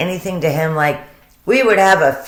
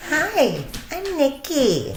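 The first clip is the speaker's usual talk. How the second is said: put-on sing-song teeny bopper voice, very high; 10 semitones higher, 6 dB quieter than usual. Retelling a woman's greeting to an agent in an interview: Nikki's teeny bopper voice. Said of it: "It's the teeny bopper voice".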